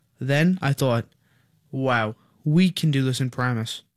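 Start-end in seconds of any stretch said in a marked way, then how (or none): none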